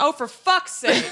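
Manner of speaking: mock exasperated blurt. Recalling a girl arriving late to the movie, retelling an out-loud outburst. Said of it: "And I just out loud".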